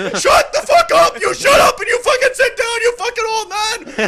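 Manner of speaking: very loud, very high, furious snapping yell. Retelling snapping at an old man who yelled at an old woman: retelling a furious yell. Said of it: "all of a sudden I just lose that snap".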